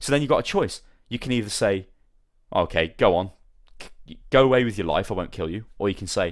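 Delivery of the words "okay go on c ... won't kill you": ordinary talk, nothing marked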